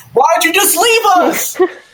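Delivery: yelling, pitched very high. As Miz Muffin starts sprinting, voicing a character yelling after the group. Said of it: "he still yells".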